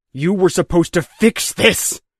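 raw, rasping, hoarse shouting, high-pitched outburst. Cal, his anger surging, confronts Dr. Balsam as she materializes, hoarse shout. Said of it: "he shouted hoarsely".

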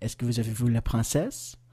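questioning tune climbing on princesse. Explaining French question intonation, rising pitch on princesse. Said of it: "C'est une question. Alors, l'intonation monte".

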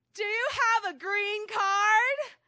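put-on booming voice, loud and very high. Retelling what a cashier asked, in a big booming voice. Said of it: "the cashier had this big booming voice".

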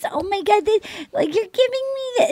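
put-on childlike little-girl voice, very high pitch. Imitating how she talks when she's lying, little-girl voice, higher. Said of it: "She talks like a little girl when she's lying ... goes like this ... her voice goes up".

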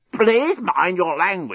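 croaking, pitched high. Narrator reads the despot answering the journalist, croaking. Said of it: "croaked the despot".

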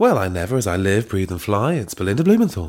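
airline pilot announcement voice. Storyteller voicing Belinda Blumenthal, speaking like a pilot making an announcement. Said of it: "like she was doing the announcement".

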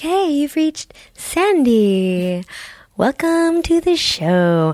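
sexy, sultry, seductive voice with a drawn-out word. Trying out voices for a show greeting, this one a sexy voice. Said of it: "so I guess this could be my sexy voice".

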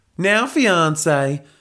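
put-on high-pitched drawl with a southern Texan accent. Reading a story aloud, the character speaks in a southern Texan drawl. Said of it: "drawled Helga in her southern Texan accent".

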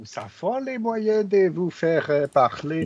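terrible put-on German accent. Speaking to others who laugh at the bit, in a bad fake german accent. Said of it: "On n'a pas vu un accent aussi".

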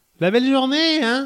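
very high little grandmother voice. Speaker quotes a line they had written, in a grandmother voice. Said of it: "que j'avais mis avec un ton de grand-mère".

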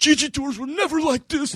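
very high, frantic put-on panic. Retelling a chaotic escape, the speaker imitates Evan freaking out in the getaway car. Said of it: "he's just like freaking the fuck out".

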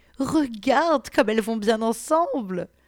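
upbeat, chirpy voice. A woman comments on the two kneeling women, in a cheerful tone. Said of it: "commenta la femme d'un ton enjoué".

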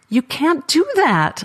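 high, stuttering, tripping over the words. Narrator reads her reply after being offered friendship, stuttering. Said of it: "I stuttered".

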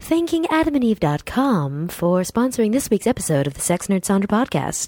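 sultry, sexy radio voice. Podcast host reads the sponsor thank-you in a sexy radio voice. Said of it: "this is my sexy radio voice".

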